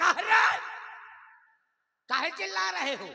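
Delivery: high, loud, angry scolding shout. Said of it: "बड़े ताय में बोला करूंगा".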